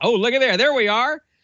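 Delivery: high, fired-up, excited exclamation.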